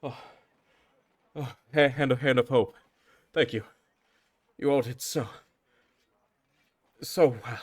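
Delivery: short of breath, panting. A guard stops the departing group to thank them, out of breath and winded. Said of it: "I'm a little winded from stopping you from leaving".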